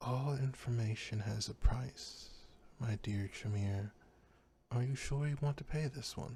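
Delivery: very quiet, dark, barely-there murmur. A narrator voices a mysterious voice speaking to a panicking Tremere; very quiet, dark voice. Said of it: "a voice speak to you very quietly, very dark".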